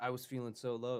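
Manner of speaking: plain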